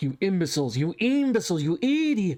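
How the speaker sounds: enraged villain voice, furious rant, rising pitch. Cutting back to the castle where Breeder is yelling: pissed-off Breeder yelling. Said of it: "Breeder's all pissed off".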